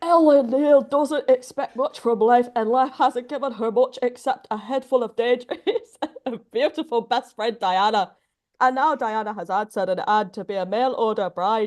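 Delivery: ogre voice with a Scottish accent. Asked by others to read a book blurb aloud, in a Shrek voice. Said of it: "have a Shrek voice in you?".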